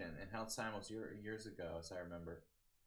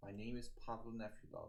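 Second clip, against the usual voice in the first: put-on mild-mannered accent blending Eastern European and British; 2 semitones higher than usual. Doing an impression of a chess player introducing himself: Nefedov imitation. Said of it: "the best I could do for Nefedov imitation".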